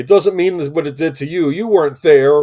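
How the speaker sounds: booming, high, very loud, all-out shouting rant. Retelling a comic book shop scene from Spaced: imitating Simon Pegg yelling. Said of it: "he's yelling".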